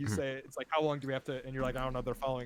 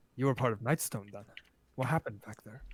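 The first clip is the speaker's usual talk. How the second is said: hushed whisper; 2 semitones lower than usual. Game master voicing a guy who whispers to the players' characters: whispering. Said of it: "the guy whispers to you".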